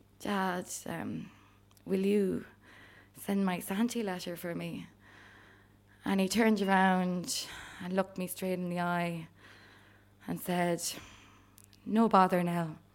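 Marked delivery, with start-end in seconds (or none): 0.2-4.9 mock sheepish tone, much quieter. Knocking on the shed door, the speaker acts out asking their dad, retelling a sheepish ask. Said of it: "I sheepishly said".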